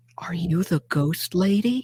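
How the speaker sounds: hushed, half-whispered stage whisper. Retelling a phone call from the next library, retelling a half-whisper. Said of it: "she's like whispering".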